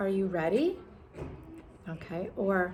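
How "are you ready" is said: upward, rising tune lifting on ready. Demonstrating yes-no question intonation, rising at the end. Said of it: "your voice is going to rise".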